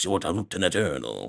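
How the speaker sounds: quick, mumbled put-on voice. Imitating how Robert Downey Jr. talks in the movie: fast, mouth barely moving. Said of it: "that is the way that he talks throughout the movie".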